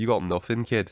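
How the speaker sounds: put-on Scottish accent slipping in unintentionally. Quoting a wrestler's reply to a rival: Scottish-sounding accent. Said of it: "That still felt very Scottish".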